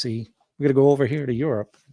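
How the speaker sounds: put-on old-fashioned 1940s-style, mid-century speech manner. Discussing an Eisenhower book, showing how people talked in the 1940s and 50s. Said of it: "they talk like this".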